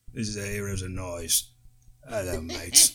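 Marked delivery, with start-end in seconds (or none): 2.0-2.9 low, put-on British accent. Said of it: "That British accent's gonna put me out".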